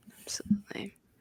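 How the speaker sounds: soft, hushed mock ASMR whisper. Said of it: "And with little A S M R".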